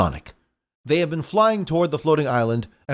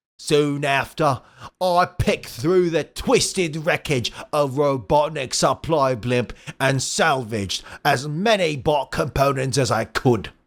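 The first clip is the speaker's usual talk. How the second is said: put-on Australian robot villain voice. Voicing a tank-bodied robot villain's monologue: Australian Robotnik voice. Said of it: "Australian Robotnik".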